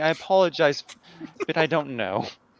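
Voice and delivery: embarrassed, sheepish tone. Voicing a character walking away after forgetting a name: embarrassed, sheepish in-character line. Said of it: "as I'm kind of embarrassedly, like, sheepishly".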